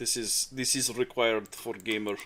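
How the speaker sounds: Baltic-sounding accent. Joking while placing a piece in a game: Baltic-sounding accent. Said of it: "You sound like you're from the Baltic area".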